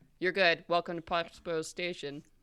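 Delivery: dispassionate, detached, emotionless announcer voice. A voice from a speaker in the room addresses those arriving, dispassionate. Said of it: "you hear a dispassionate voice from some speaker".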